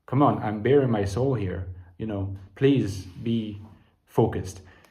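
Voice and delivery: ordinary talk, nothing marked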